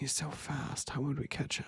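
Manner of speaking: barely there, hushed, whispered mutter under the breath. Acting out a meme reply about dinner, muttering under breath. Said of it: "Me under my breath".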